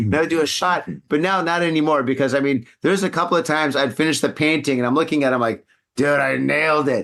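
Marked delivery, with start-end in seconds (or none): 5.9-7.0 mock drunk, slurred speech. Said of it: "slurring my words and shit".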